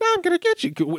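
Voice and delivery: comically very high-pitched voice. Speaker recalling the Guyver facing down gangsters in a film, Guyver's high, high voice. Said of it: "In that high, high voice".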